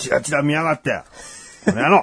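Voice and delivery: playful, fake-angry grumbling. Reacting to being glanced at, pretend angry grumbling. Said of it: "怒ってるんですか？".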